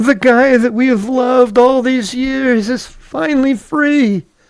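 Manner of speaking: very high, drawn-out, slow fake crying. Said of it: "I'm crying".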